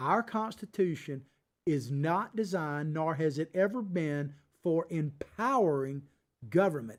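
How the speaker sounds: slow, measured, deliberate, spelled-out delivery. The speaker repeats a point to the audience: slower, deliberate repetition. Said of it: "Let me say it again a little slower".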